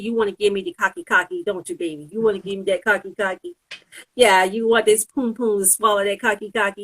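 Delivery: goading, needling, mocking and taunting tone. Retelling how they taunt online trolls: retelling own taunting of trolls. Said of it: "I taunt them".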